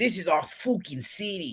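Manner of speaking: bad, clumsy Boston accent, high and slow. Repeating the quote a co-host just did: Big Papi impression. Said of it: "My impression was no worse than yours".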